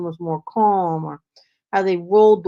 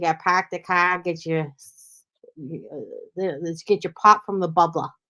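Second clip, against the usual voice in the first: imitation Boston accent. Speaker shows how people from Boston talk, Boston accent. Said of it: "Boston is a class by itself".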